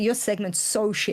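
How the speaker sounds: ordinary talk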